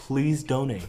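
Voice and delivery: announcer-style voice-over narrator voice. Speaker repeats the nonprofit's donation plea, narrator voice. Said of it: "You have to say that in narrator voice".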